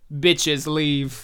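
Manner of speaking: put-on deadpan. Retelling a film scene where a man loading a silencer clears an apartment; retelling a deadpan line. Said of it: "he says deadpan".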